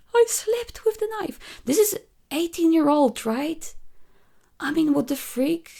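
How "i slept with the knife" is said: imitated crying, higher pitch. Retelling a comic scene where Persephone cuts her hand: imitating Persephone crying. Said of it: "And she's crying".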